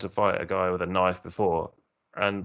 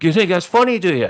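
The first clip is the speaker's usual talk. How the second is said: mock very high, very loud, shrill aggressive confrontational voice; 12 semitones higher, 10 dB louder than usual. Retelling a man confronting the speaker's friend over a water pistol, imitating an aggro man. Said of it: "he just started getting more and more aggro".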